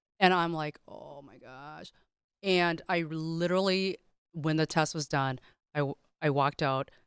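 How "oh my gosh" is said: very soft, panicked, under the breath. Retelling the moment panic set in during a test, retelling a panic. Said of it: "panic just set in".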